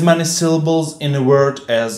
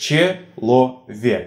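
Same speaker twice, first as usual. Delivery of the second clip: slow, syllable-by-syllable delivery. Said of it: "Let's take previous examples".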